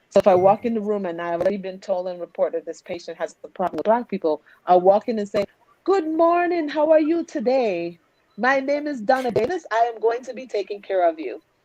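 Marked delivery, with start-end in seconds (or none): 5.8-11.3 put-on Jamaican accent, pitched up. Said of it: "I use my Jamaican accent a lot".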